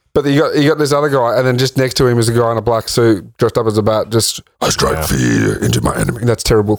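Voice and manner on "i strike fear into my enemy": very deep, low, rumbling orc-like voice. Describing a man dressed as a bat, the speaker voices him, sounding like an orc. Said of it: "That sounded like an orc".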